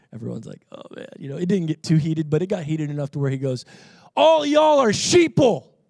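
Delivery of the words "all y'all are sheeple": put-on very high, slow, drawn-out shout. Retelling what a man yelled at everyone staring at him, retelling a man's yell. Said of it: "He yells to all of us".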